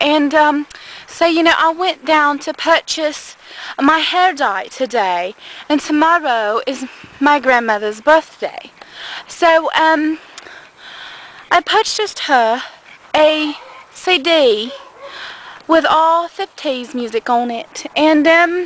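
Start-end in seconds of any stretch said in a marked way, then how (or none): 1.6-18.7 put-on fake English accent. Telling about buying a CD at the register: put-on English accent. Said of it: "I can talk like I'm English".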